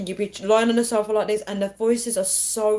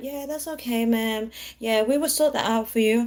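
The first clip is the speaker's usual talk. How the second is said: easygoing, calm, laid-back put-on American accent; 2 semitones higher than usual. Mimicking how americans respond to a stressed customer; imitating a calm american. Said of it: "But Americans are just like".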